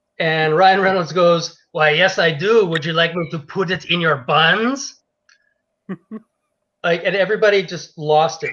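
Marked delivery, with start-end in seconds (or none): 1.7-5.0 fake, creepy, put-on French accent. Retelling a skit where the cart guy answers the first customer, in a pervy French accent. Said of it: "perv with a French accent".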